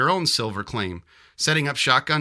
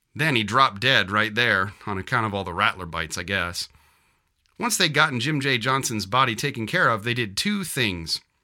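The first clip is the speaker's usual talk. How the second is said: plain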